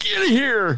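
very high-pitched, short, curt delivery. Retelling a phone call, imitating Dennis asking where they are. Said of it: "It's not how I sound".

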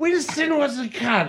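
high, slow Cockney voice breaking into laughter. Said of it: "our favorite way to fuck around is to do Derek and Clive bits".

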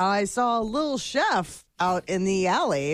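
ordinary talk, nothing marked

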